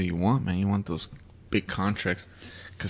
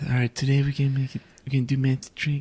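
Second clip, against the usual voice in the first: put-on lisping voice, higher; 5 semitones higher than usual. Joking about a magician's lisp: Criss Angel impression with a lisp. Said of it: "You like the lisp?".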